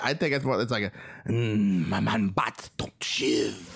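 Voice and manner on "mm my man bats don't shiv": very slow, crawling delivery in odd patois. Showing how Batman should talk: Batman voice in weird patois. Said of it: "it's like kind of this weird patois".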